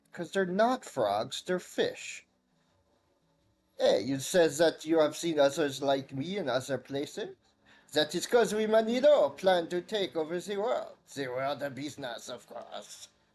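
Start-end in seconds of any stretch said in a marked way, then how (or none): 3.8-13.1 put-on bad French accent. Voicing a Manilo speaking to the player: bad French accent as Manilo. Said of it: "Forgive my terrible French accent".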